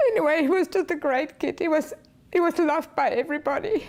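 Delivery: tearful weeping. Remembering Frankie, who died of a fentanyl overdose, crying. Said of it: "([name] crying)".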